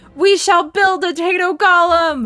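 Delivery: high crowd shout, many voices calling out together. The storyteller voices the gathered Tatos rallying together: Tatos shouting out. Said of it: "they shout out and they're like".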